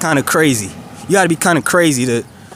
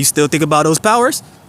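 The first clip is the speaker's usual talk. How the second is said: lively, animated, point-blank delivery; 3 semitones higher than usual. Retelling what a stranger said at work: imitating an animated stranger. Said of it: "He was very animated".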